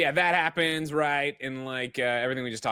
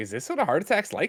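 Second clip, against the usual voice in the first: plain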